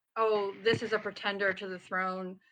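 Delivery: normal talking voice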